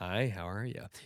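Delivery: hushed, soft, utterly ordinary, super normal delivery. Agreeing and repeating the bit in normal SpongeBob voice. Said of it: "normal SpongeBob where he's like".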